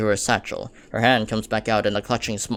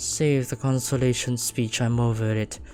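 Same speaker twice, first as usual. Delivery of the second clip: cold, frigid, lifeless, dead-sounding voice. Wiping away tears, brushing off a consolation speech, frigid and dead. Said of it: "Her voice is frigid".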